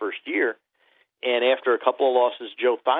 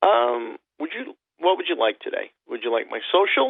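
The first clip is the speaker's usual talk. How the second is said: put-on playful tone, higher; 5 semitones higher than usual. Retelling a call from a telemarketer: imitating own playful tone. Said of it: "in a playful mood".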